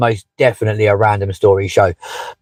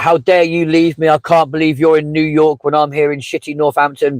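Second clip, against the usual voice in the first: put-on angry shouting; 5 semitones higher than usual. Retelling how a man turned and shouted at his suitcases, retelling a shout at suitcases. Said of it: "started shouting at his suitcases".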